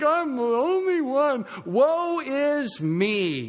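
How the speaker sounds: mock, very slow, high, swooping, sing-song whimpering whine. Acting out how the man he is talking about sounded, in a mock-whiny voice. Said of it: "I think he was whiny. He's like".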